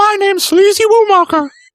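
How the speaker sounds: sock puppet voice. Pitching a sock puppet bit for the show intro: sock puppet voice. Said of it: "I'm thinking sock puppet".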